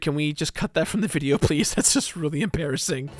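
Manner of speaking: normal talking voice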